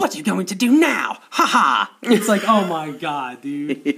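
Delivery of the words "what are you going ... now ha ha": put-on high-pitched, badly dubbed old witch voice. Retelling the main witch's line from a badly dubbed film: imitating badly dubbed old witch. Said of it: "it's so badly dubbed".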